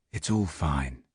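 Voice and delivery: very gentle, almost subliminal delivery. Narrator retelling what they said again, even more gently, very gentle. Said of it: "even more gently, almost subliminally".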